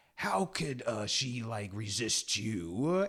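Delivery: put-on slow, stretched, drawn-out mild yell, half-screamed. Retelling a film scene, Snoke's line: imitating Snoke screaming. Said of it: "Snoke is just immediately screaming".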